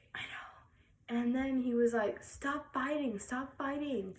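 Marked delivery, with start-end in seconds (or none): 2.3-4.2 yelling, shouting. Retelling how he yelled at the two fighting: imitating Graham yelling. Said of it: "he started yelling at us".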